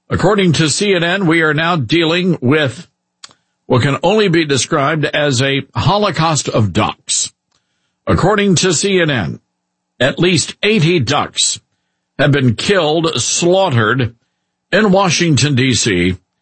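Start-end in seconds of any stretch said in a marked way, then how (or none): none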